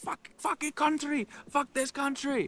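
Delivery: play-acted, very high-pitched, furious raging yell. Retelling a man turning in circles: imitating a man yelling angrily. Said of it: "He was yelling something about Japan".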